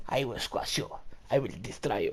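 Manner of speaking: put-on deep, soft, low-pitched voice with heavy Russian accent. Retelling what another rugby player told him, in an Ivan Drago impression. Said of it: "It's like Ivan fucking Drago".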